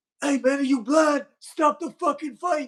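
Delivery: shrill, very high, loud shout. Retelling how someone at the far corner demanded the fight stop: imitating someone yelling. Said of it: "he yells".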